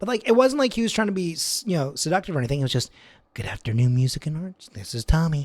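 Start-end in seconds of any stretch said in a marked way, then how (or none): 3.3-5.5 small, little, warm, cozy receptionist voice. Imitating a coworker answering the phone: imitating a coworker's quiet little voice. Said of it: "a quiet little voice".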